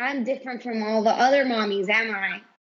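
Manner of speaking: plain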